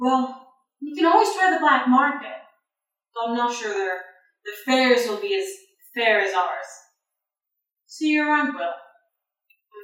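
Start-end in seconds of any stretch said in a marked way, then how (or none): 0.0-8.6 smug character voice. Voicing a departing character who smirks at the player: smirking NPC voice. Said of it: "kinda smirks and goes".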